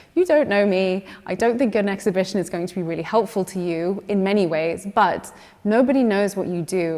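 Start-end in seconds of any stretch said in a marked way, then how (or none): none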